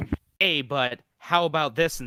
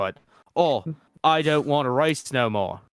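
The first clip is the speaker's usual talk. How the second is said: terrible, poor, fake put-on British accent. Retelling a scene where a race-car driver talks to his wife, terrible british accent. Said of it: "I apologize for my terrible British accent".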